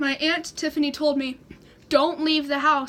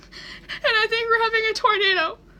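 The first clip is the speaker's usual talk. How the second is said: teary, high voice, crying through the words; 8 semitones higher than usual. Retelling a 911 call made at fifteen, imitating their own past crying. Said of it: "so I'm crying".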